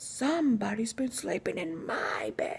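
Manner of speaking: big, growling delivery. Reading the story as Daddy Bear finds his bed untidy, big growly Daddy Bear voice. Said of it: "in his big growly voice".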